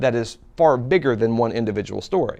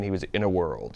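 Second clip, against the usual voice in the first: movie-trailer voice, much lower and quieter; 5 semitones lower, 9 dB quieter than usual. Explaining the famous movie trailer guy's opening line, in Don LaFontaine trailer voice. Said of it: "[imitates the famous voice]".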